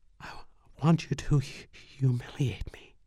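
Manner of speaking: slow, trembling, quavering whisper. Reading her line to the narrator in the story: quavering whisper. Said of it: "she whispered, her voice quavering".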